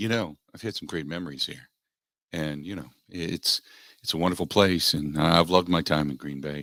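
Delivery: level, low, flat, droning monotone. Speaker imitates the stock line they all give, in a flat monotone. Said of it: "they all do the the monotone".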